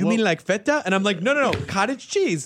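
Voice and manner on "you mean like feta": put-on, imitated Latin American Spanish accent.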